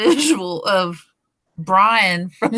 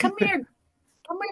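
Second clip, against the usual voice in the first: put-on soft, piping, very high whistly old man voice; 11 semitones higher, 9 dB quieter than usual. Trying to recall an old man's name, doing his little whistle voice. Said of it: "he's got that little whistle voice".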